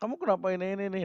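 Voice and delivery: high, sudden angry outburst. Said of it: "tiba-tiba marah-marah".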